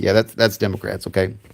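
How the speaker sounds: plain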